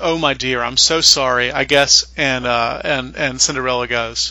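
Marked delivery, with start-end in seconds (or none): 0.0-2.1 put-on phony sympathy, fake pitying tone. Retelling the stepmother's reply to Cinderella: imitating the stepmother's phony pity. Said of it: "puts on this really phony pity and says".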